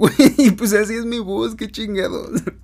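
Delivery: loud, high-pitched, exasperated delivery.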